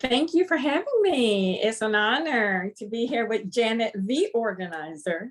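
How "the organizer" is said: the, heavily stressed. A guest thanking the host for having them, stress on the. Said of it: "I put emphasis on the".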